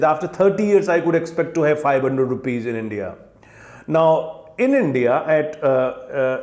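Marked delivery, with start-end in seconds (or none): none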